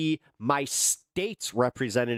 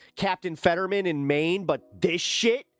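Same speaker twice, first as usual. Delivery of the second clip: normal talking voice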